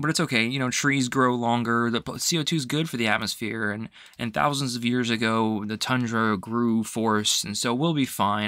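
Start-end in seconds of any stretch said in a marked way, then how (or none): none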